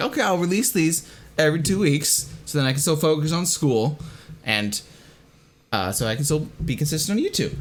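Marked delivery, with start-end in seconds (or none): none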